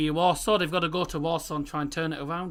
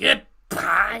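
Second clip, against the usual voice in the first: put-on, raised Scouse accent; 5 semitones higher, 6 dB louder than usual. Host signing off the show, saying goodbye in a Scouse accent. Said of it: "that's the uh, Scouse way of it".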